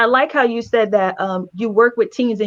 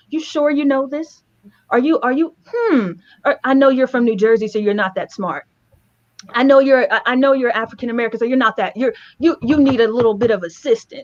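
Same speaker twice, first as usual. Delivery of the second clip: acted, patronizing, condescending teacher voice; 2 semitones higher than usual. Retelling how a teacher talked to them at sixteen: imitating a condescending teacher. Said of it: "a teacher who would talk to me condescendingly".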